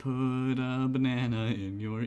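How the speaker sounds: each word dragged out slowly. Quoting a remembered web cartoon: Charlie the Unicorn voice. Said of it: "the Charlie the Unicorn thing of where it's like".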